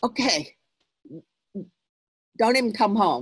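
upset, angry, sharply snapping tone. Parent retelling what they said when their son upset them: retelling an angry snap. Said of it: "but also very angry".

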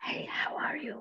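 strong, loud, forced whisper, all breath. Demonstrating a glottalized H to a listener, in a loud whisper. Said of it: "just whisper to me".

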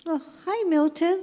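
nervous character voice. Lulu greets the host after hiding under the table, nervous Lulu voice. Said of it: "I'm a little nervous about being interviewed".

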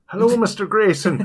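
fake Irish accent, very high, shrill and loud. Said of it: "I don't know why I went Irish".

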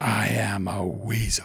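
slow, hushed, soft and secretive half-whisper. Narrator reads Jazzy D's reply to Daley B, half-whispered. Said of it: "she whispered".

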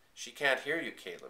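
plain

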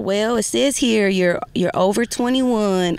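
put-on Southern American accent. Retelling a phone call about her bills with a lady, Southern accent. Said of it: "this like lady with a Southern accent".

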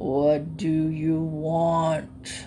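deep, drowsy, half-awake grumble, "want" drawn out. Reading the grandfather of all alligators, just woken, in a deep grumbling sleepy voice. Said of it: "his deep grumbling voice and said sleepily".

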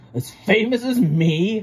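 huffy, high, drawn-out huffing. One engine answers another engine's praise of a rival: huffed. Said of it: "huffed Gordon".

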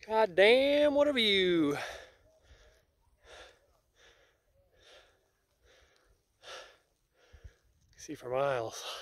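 breathless, winded, out of breath. On a hike, admiring the view, out of breath. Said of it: "still out of breath".

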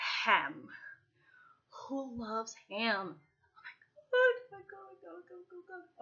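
delighted, carried-away excitement, high and swooping pitch. Listing Thanksgiving dishes, the speaker can't help getting excited. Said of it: "I get excited, I'm sorry".

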